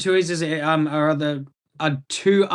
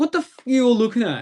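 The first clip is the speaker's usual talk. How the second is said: acted-out, sudden, high, angry snapping outburst; 8 semitones higher than usual. Retelling how a stared-at beer drinker snapped: imitating someone snapping angrily. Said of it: "he kinda just snaps a little bit".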